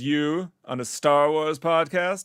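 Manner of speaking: put-on slow, posh, upper-class mid-Atlantic accent. Retelling what a man said to him about the podcast, in a transatlantic accent. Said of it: "he had that mid at that transatlantic accent".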